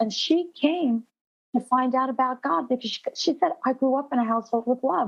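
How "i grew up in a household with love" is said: put-on female German accent, higher. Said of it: "she had the German accent".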